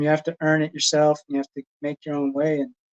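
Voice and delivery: ordinary talk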